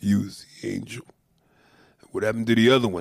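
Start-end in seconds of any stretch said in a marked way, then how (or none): 0.0-1.0 put-on weepy voice, as if fighting tears. Acting out the scene as the tear comes down his face, mock-tearful Stallone line. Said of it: "the tear comes down his face".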